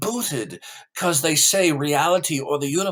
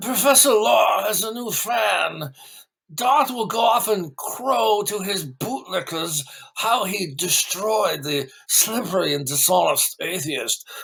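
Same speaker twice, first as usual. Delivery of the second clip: put-on English accent with "fan" drawn out; 4 semitones higher than usual. Reading viewer comments aloud after being asked: put-on English accent. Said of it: "English accent since you do it so well?".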